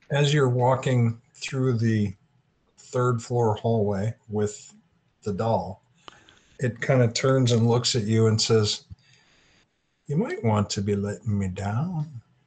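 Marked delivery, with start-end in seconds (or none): 10.0-12.2 very soft, quiet voice, barely above a hush. A game narrator voices a doll that turns to a player, in a very soft voice. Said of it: "And it says it very softly".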